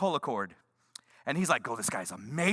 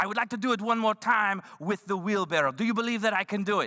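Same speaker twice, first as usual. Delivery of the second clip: mock, fake French accent; 3 semitones higher than usual. Retelling what the French guy asked after his act, in a mock French accent. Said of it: "that's what all Frenchmen sound like".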